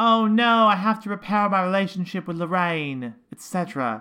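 put-on twangy British accent. Acting out a character's thoughts in a twangy British accent. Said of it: "quite the British accent".

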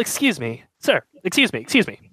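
put-on young British man voice. Voicing a younger British man who approaches a worker: young British man voice. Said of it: "younger British man walks up to you".

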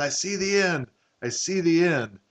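mock overjoyed, eager, high drawn-out cry. Retelling a favorite movie scene, acting out the character cresting the hill: imitating an excited cry. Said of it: "he's so excited".

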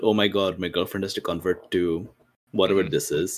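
ordinary delivery

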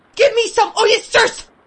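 cry bursting out, very high, loud, desperate. The hungry narrator stretches out his hand and cries out: crying out. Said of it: "was the cry that broke from me".

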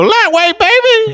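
very high, cartoonish voice. Describing a bodybuilder's catchphrase between lifts, Ronnie Coleman impression.

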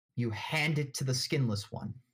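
ordinary delivery

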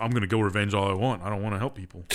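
ordinary delivery

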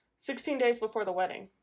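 usual speaking voice

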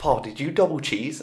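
put-on American accent. Retelling a party story, quoting Darren: imitating Darren's American accent. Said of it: "this is a very good impression of him".

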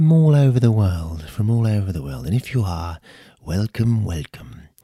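loud, smooth, lovely radio announcer delivery. Opening the podcast for listeners, in a lovely radio voice. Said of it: "in this lovely radio voice".

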